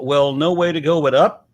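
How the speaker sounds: ordinary talk, nothing marked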